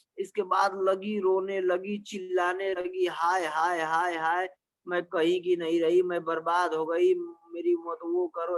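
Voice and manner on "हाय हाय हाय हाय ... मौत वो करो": ordinary delivery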